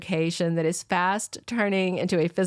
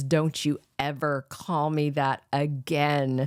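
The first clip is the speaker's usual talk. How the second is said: mock dark, menacing voice, lower and slower; 3 semitones lower than usual. Recapping a scene, quoting a man's threat in a mock dark, menacing tone. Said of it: "takes this very dark and menacing tone of voice".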